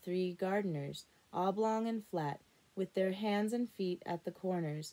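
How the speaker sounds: plain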